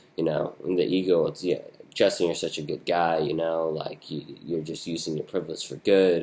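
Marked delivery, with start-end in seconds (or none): none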